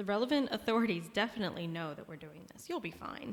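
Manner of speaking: fast, sarcastic, mock-reassuring read with audible smile.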